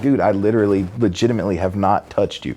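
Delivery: ordinary delivery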